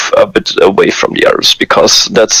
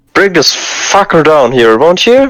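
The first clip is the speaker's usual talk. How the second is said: put-on high shout, in character; 7 semitones higher than usual. Voicing a character after a firebolt at a target behind glass: in-character shout. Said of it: "And then I'm going to shout".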